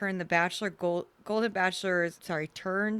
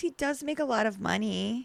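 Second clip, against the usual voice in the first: put-on grating reality-show-star style voice; 4 semitones higher than usual. Retelling what a cast member said about her partner: Allie impression. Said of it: "such a good Allie impression".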